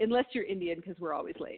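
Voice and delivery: plain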